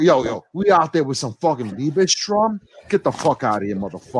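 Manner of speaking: put-on Bronx dude accent. Speaker arguing about classical composers, in a put-on bronx accent. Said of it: "I'm working on the Bronx dude".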